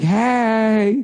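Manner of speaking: put-on female voice, pitched high.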